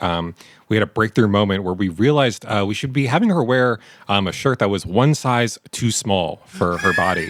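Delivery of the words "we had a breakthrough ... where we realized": ordinary delivery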